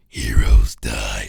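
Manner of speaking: very low menacing villain growl. Praising a villain's voice and attempting it: imitating Zoom's menacing voice. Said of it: "gives that little v-, voice".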